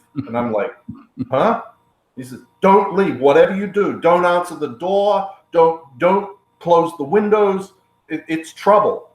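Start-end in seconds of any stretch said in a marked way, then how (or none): 2.6-9.0 put-on halting broken English with foreign accent. Speaker retells what a man told him, imitating his broken English. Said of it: "in his broken English".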